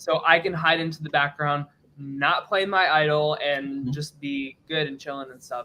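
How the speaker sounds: ordinary delivery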